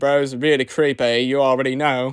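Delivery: low Australian accent slipping out. A speaker answering questions slips into an australian accent. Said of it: "my Australian accent came out".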